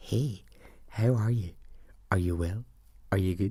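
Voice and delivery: close, soft, secretive whisper. Retelling how a coworker greeted them before a class: imitating someone whispering. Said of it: "she whispered into my ear".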